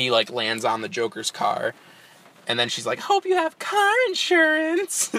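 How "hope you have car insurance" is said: high-pitched, drawn-out cartoon voice. Describing a movie trailer, the speaker quotes a character: Harley Quinn impression. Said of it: "That's my Harley Quinn impression".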